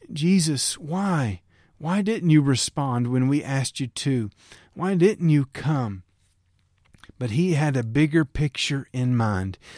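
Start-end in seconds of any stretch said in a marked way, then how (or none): none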